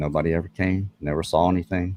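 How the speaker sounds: ordinary delivery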